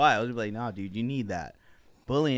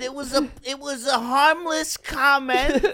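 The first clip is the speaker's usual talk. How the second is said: mock accented voice, higher and louder; 14 semitones higher, 6 dB louder than usual.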